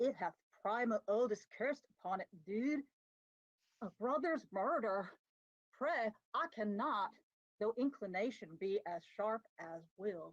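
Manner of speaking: surfer-dude voice, laid on thick. A player performs a monologue as Chet, in a Chet surfer-dude voice. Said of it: "Chet is more of like a surfer guy".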